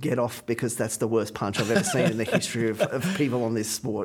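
ordinary talk, nothing marked

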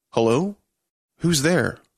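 slow, halting put-on voice. Simulated woman's voice from a speaker, first words after loading: slow, halting voice. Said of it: "can't stop her from sounding slow".

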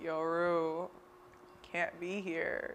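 flat monotone voice with no tune. Speaker praising a favorite show character, imitating his line: Fez monotone impression. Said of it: "his monotone way of being like".

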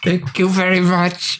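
slow words squeezed out through clenched teeth. Imitating a comedian thanking the crowd: Andy Kaufman through clenched teeth. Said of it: "through clenched teeth".

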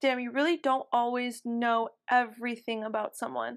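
ordinary delivery

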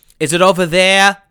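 very loud, demanding, rude shout. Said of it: "Why are you yelling like that?".

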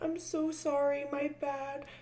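put-on fake crying. Retelling someone's apology after she was sent home, imitating fake crying. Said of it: "the fake cries of".

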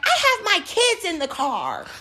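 very high, shrill, swooping loud shout. Retelling what a customer said while knocking on the glass: imitating a customer at the window. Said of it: "and she's like".

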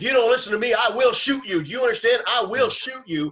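high-pitched, mock screaming and yelling. Describing police confronting a man in a hotel hallway: imitating a cop screaming. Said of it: "the cop is screaming at him saying".

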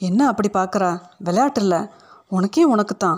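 ordinary delivery

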